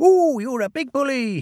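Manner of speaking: very high-pitched, fake, frightened whimper. Reading a story, the narrator voices a character pretending to be frightened, whimpering. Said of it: "he whimpered".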